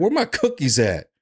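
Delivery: put-on bossy, demanding little two-year-old voice. Acting out a two-year-old demanding cookies: imitating a demanding two-year-old. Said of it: "Little two-year-old walking in here".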